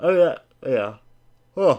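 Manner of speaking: loud, drawn-out yawn through the words. Talking football trades with the guys, while yawning. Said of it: "I'm yawning here".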